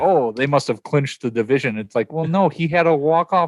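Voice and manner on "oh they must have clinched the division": mock sarcastic tone. Retelling a sportswriter's tweet about the bat flip: retelling a sarcastic remark. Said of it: "he was being sarcastic".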